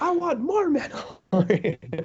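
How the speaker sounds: pitch goes very high, slow and swooping. Retelling a scene where Mickey Mouse answers phone calls: Mickey Mouse voice. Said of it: "He's like".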